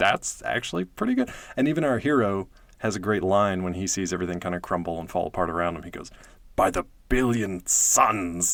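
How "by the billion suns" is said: very slow, drawn-out, throaty growl. Quoting a hero's line as everything falls apart around him, growling it. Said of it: "he just growled that line out".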